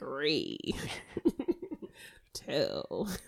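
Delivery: whispered, half-hearted and terrible put-on voice. Asked to do the countdown, the speaker counts in a Jack Nicholson impression. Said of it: "Please do it in a Jack impression".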